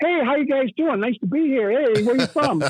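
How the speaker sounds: high, eager-to-please stock stand-up comic patter. Mocking how other comics greet the audience: imitating a typical comic. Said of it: "a billion comics".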